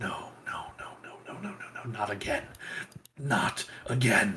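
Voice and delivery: very quiet whisper under the breath. Voicing a character who steps back in horror: whispering. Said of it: "you can hear him, like, whispering".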